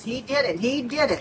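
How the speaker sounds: ordinary talk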